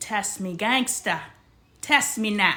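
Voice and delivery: loud put-on Jamaican accent with full swagger. Telling the audience about a crazy week, in a Jamaican accent. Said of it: "that's my Jamaican accent".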